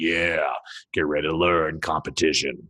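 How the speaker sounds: creepy, deep, low wrestling-style voice. Starting a lesson on competition keyword research after being sick: super creepy low voice. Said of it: "this super creepy low voice that I'm like".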